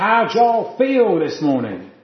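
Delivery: loud put-on American accent with preacher-like delivery. Speaker retelling how a man greeted a big church, American accent. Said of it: "forgive my American accent".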